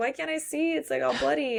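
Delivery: high, freaked-out, frightened, panicked voice. Retelling how Lucas reacts to bleeding near his eye: imitating Lucas freaking out. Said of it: "Lucas is freaking out that maybe".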